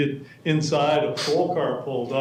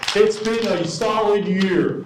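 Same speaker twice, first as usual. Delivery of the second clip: raised, pitched-up voice, slow and drawn out; 6 semitones higher, 4 dB louder than usual. Retelling what the city manager said in a meeting: imitating someone raising his voice. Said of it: "he raised his voice and said".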